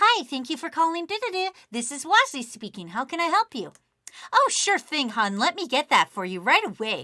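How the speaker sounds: high-pitched receptionist-style office phone voice. Demonstrating the office persona answering a call, high-pitched office phone voice. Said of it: "she also has a higher pitched voice".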